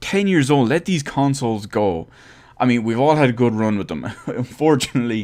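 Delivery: words broken up by laughter. Talking to viewers about old game consoles, the speaker is laughing while talking. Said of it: "I'm laughing here at the same time".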